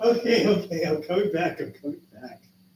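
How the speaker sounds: giggling, laughing through the words, trying to recover. Trying to recover during a fit of laughter: laughing while talking. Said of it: "don't know why I can't stop laughing".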